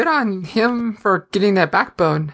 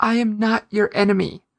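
ordinary talk

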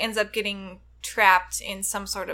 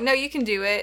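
ordinary delivery

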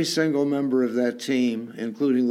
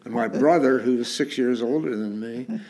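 ordinary talk, nothing marked

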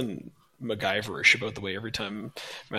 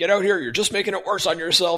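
loud, pitched-up yelling; 9 semitones higher, 7 dB louder than usual. Recalling a Ferris Bueller scene, the speaker quotes Mr. Strickland: Mr. Strickland yelling impression. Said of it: "he's yelling at him through the door".

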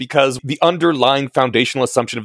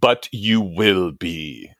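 dark, foreboding, ominous and portentous tones; 4 semitones lower than usual. Reading aloud a quoted author's line, ominous Yoda voice. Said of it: "in ominous Yoda tones".

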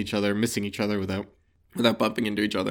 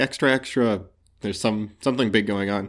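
usual speaking voice

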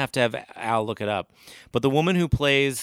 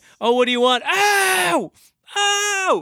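put-on very high, very slow climbing scream; 6 dB louder than usual. Retelling a movie scene where the professor yells: screaming like Sam Kinison. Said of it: "And he starts screaming at".

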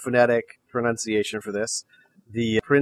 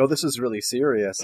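ordinary talk, nothing marked

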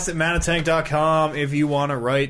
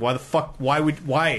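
plain

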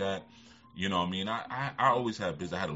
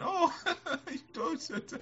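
very high-pitched, giggling, laughing voice. Retelling a doctor's reply to a man's crude advice, imitating her laughing. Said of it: "And she's just laughing".

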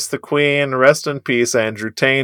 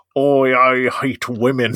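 very slow, drawn-out delivery, every word stretched. Mocking a public figure after a joke about him: Andrew Tate impression. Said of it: "that's my Andrew Tate impression".

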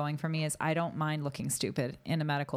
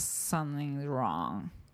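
acted slurred, very slow speech. Retelling how she sounded on the phone, imitating slurred, very slow speech. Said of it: "she was talking extremely slowly like this".

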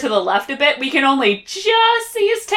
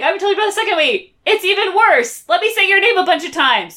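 put-on small character voice, yelling out; 5 semitones higher than usual. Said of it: "takes the time yelling".

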